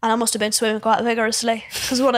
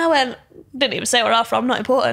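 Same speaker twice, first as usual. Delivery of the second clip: usual speaking voice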